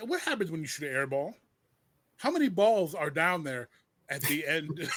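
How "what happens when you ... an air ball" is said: usual speaking voice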